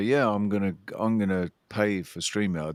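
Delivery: ordinary delivery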